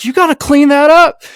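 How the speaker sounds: very high, loud, unhinged screaming. Retelling a stranger yelling from the end of the driveway, imitating him screaming. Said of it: "unhinged guy just screaming at me".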